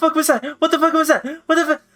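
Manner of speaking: hysterical screaming. In a role-play game, speaking as her character: screaming hysterically. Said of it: "she screams hysterically".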